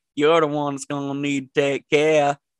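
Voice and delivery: put-on backwoods hillbilly accent. Repeating a line a man says while driving off, in a hillbilly accent. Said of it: "Hillbilly. Acting career".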